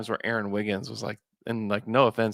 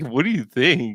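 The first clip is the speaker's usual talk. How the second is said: loud, big silly voice; 4 semitones higher, 5 dB louder than usual. Retelling how Nate Duncan asked about Oklahoma City: silly voice imitating Nate Duncan. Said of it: "in a silly voice".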